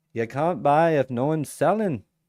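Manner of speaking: put-on terrible Greek-accented English. Quoting Tino from Trader's Reality: terrible Greek English accent. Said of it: "terrible Greek English accent there".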